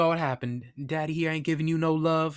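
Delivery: put-on friendly, high-pitched Texas accent. Retelling how a man talked to a friendly dog, high-pitched texas accent. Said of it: "kind of like high pitched, but still that Texas accent".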